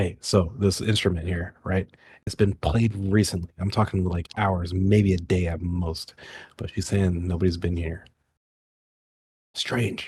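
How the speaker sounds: hushed, secretive, conspiratorial half-whisper. Bringing everybody into a tight circle so others won't hear: half-whispering. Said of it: "I'm gonna just kinda whisper".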